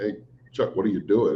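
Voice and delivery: ordinary talk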